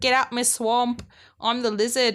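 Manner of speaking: mild, half-hearted, shouty yelling. Recapping a story that starts with the lizard yelling at everyone; imitating the lizard yelling. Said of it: "the lizard just yelling at everyone".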